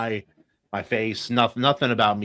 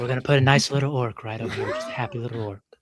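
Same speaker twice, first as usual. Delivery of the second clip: calm but creepy tone; 2 semitones higher than usual. Placing an orc in the painting: creepy Bob Ross voice. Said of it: "Your voice is creepier".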